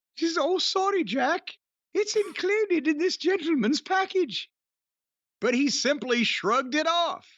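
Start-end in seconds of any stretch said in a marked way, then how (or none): 0.5-4.5 put-on English accent, pitched up. Reading out a story, quoting the hostess: put-on English accent. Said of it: "the hostess, had an English accent".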